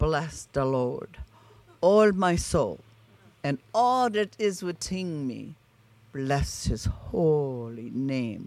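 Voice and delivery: put-on, imitated Norwegian accent. Quoting a woman's words, imitating her norwegian accent. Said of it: "in her Norwegian accent".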